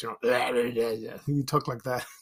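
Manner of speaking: put-on raspy older detective voice. Recalling an older detective named Fats, doing Fats's raspy voice. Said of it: "he had a raspy voice".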